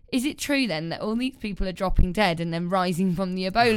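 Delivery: ordinary talk, nothing marked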